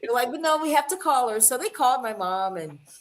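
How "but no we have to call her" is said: polite, very proper, prim voice, pitched up. Retelling how a friend's family asked to call her mom: imitating a proper-sounding family. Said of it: "they're so proper".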